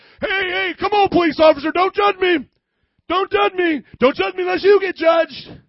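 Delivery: very high, very loud, shrill protesting voice. Picturing a police officer arresting a murderer, who protests: imitating a protesting murderer. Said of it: "Police officer's arresting the murderer".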